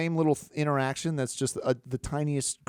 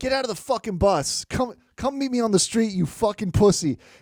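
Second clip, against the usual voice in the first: put-on shrill, loud yelling; 9 semitones higher, 6 dB louder than usual. Retelling how a man yelled at a bus driver: imitating someone yelling.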